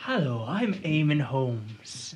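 put-on broadcaster voice. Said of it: "I can't do the old B B C voice".

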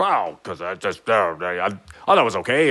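halting stammer, stumbling over the first words. Retelling how a co-writer reacted to criticism of a part, imitating Chad. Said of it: "was that a good impression of you?".

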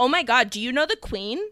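put-on American accent. The speaker retells a moment, quoting Abby in Abby's American accent. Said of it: "Abby does a very good American accent here".

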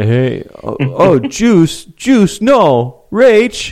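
words stretched out, pitched way up high. Doing a long-practiced impression for the others: David Schwimmer impression. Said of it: "that was my David Schwimmer".

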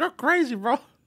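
put-on very high-pitched French street-slang accent.

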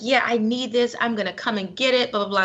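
ordinary delivery

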